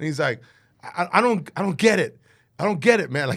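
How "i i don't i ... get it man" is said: put-on yelling, higher and louder. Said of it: "he starts yelling at me".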